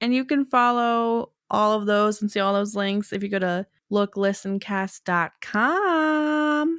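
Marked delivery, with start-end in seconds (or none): 3.9-6.8 put-on slow Southern accent. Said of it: "to a Southern accent".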